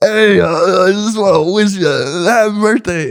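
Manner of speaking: put-on very high, sloppy, slurred drunk voice. Retelling his friend's six a.m. birthday message, imitating a drunk man. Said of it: "drunk as hell".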